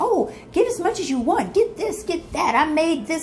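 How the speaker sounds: high, gushing hostess voice.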